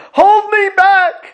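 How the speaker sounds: piercing, high-pitched, very loud, shrill, full-volume yell. Recounting a man storming in, pretending to be held back; retelling a man's yelling. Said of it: "and he'd start yelling".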